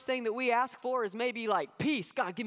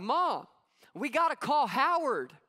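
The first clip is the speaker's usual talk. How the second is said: put-on slow child's shout, calling out; 3 semitones higher, 4 dB louder than usual. Retelling a joke about a kid in a broken-down car: retelling a kid's shout. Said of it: "the kid shouts from the back".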